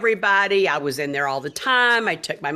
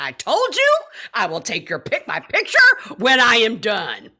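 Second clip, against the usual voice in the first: furious, mad tone with swooping pitch; 4 semitones higher than usual. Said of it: "And I was so mad".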